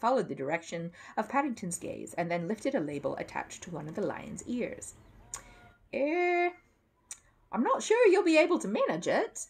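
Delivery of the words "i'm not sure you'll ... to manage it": unsure, very high, very drawn out. Adrian Crisp speaks to Paddington beside the lion: doubtful. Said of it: "he said doubtfully".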